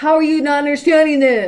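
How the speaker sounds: very loud, shrill, high-pitched yell. Showing how yelling at a child sounds: imitating someone yelling at a child. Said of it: "You don't yell at them more and be like".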